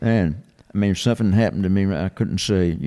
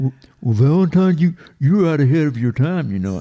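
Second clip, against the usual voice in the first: put-on loud, high voice with a Southern accent; 7 semitones higher, 5 dB louder than usual. Retelling what his publisher said to him: Bullwinkle voice with Southern accent. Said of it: "Buddy talked like Bullwinkle with a Southern accent".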